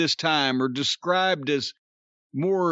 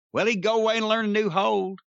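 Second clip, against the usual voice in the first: put-on Southern American accent; 4 semitones higher than usual. Telling a saying that became famous at Vince's house: Southern accent. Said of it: "that Southern accent that you're doing".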